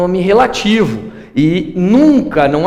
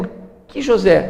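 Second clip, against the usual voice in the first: unstressed, weak que blended into José; 3 dB quieter than usual. Grammar lesson comparing uses of por que: unstressed que, run into José. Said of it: "na pronúncia a gente percebe bem que ele é átono".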